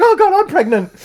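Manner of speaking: mock panicked freak-out, pitched very high. Retelling a movie scene, imitating Debbie freaking out. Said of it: "Debbie freaks out".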